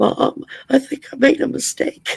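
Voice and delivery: put-on small boy's voice, cracking. Retelling a first phone call home from basic training: imitating a cracking little boy voice. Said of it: "the little boy voice that was cracking".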